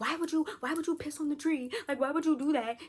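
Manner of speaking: frantic, freaked-out, high, panicked scolding tone. Retelling a woman's reaction after the check engine light came on, imitating someone freaking out. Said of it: "so Sabrina's freaking out".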